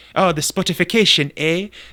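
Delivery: Canadian "eh" heavily leaned into. Mocking how a game character sounded in a trailer: imitating Lewis's Canadian-sounding accent. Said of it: "he sounded like he was trying to be Jamaican or, like, Canadian".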